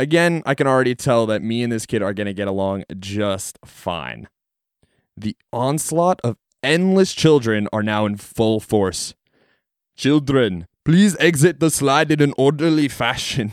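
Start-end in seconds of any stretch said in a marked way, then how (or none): 10.0-13.5 put-on killer-robot movie cyborg voice. Retelling a coworker announcing at the slide in a Terminator impression voice. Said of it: "in a Terminator impression voice".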